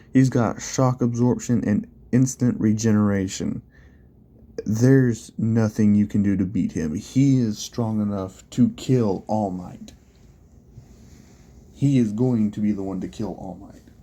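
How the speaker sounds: ordinary talk, nothing marked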